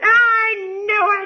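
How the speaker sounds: very high, shrill, high-pitched screaming yell. Telling of calling their mom to admit alcoholism, imitating her screaming. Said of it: "And she's screaming at me".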